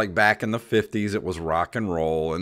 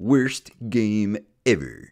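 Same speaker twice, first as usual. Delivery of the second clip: self-important cartoonish nerd voice; 4 semitones higher, 3 dB louder than usual. Picturing how a PC gamer would sound, doing a Comic Book Guy voice. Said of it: "that was actually a phenomenal impression".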